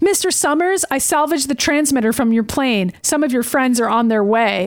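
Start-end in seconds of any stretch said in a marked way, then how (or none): none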